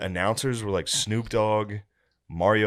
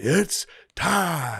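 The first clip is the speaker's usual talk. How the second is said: high-pitched boxing ring announcer delivery; 9 semitones higher than usual. Retelling a fight announcer's catchphrase: imitating a ring announcer. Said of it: "now his younger brother goes".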